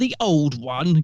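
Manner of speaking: pompous, haughty, lofty delivery. Discussing a Doctor Who episode, the speaker quotes the Doctor: mock-pompous Doctor impression. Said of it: "getting all pompous".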